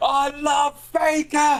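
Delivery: mock screaming, very high and shrieking. Retelling how someone at a gig held up a picture: imitating Joe screaming. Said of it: "Just going".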